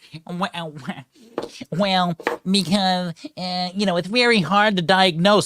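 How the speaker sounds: mocking, derisive, hesitant TV shill voice. Retelling what the paid shill on the news said: mocking imitation of a TV shill. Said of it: "the paid shill there for N B C News is like".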